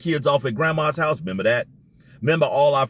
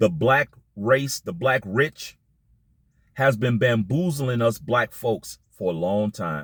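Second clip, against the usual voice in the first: every word drawn out very slowly, deliberate; 3 semitones lower than usual. Addressing an audience, saying it real slow. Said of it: "I'm gonna say this real slow".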